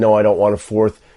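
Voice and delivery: ordinary talk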